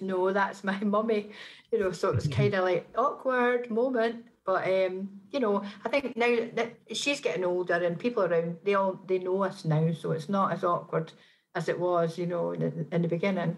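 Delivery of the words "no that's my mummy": ordinary talk, nothing marked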